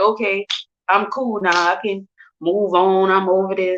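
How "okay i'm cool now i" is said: plain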